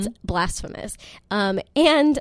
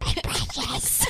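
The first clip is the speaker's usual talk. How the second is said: half-whispered, airy, breathy creature voice; 8 semitones higher, 6 dB quieter than usual. Joking about loving coffee, doing a Gollum voice. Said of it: "Like Gollum".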